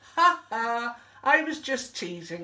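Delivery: laughing, teasing delivery. An elephant turns back to another elephant calling after him: laughing. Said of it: "laughed Elmer".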